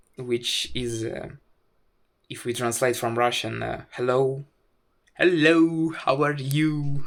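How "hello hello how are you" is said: slow put-on Indian English accent. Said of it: "in Indian accent".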